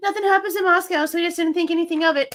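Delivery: scornful, sarcastic, mocking mimicry. Repeating someone's words just heard from a recording: mocking imitation of her words. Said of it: "There's that bullshit again".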